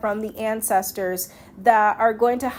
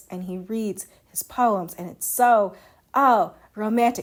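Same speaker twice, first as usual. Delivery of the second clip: plain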